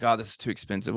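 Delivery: normal talking voice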